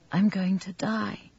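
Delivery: soft, high, quavering, trembling voice. A wounded girl speaks to the man treating her wounds, in a tremulous voice. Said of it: "said in a tremulous voice".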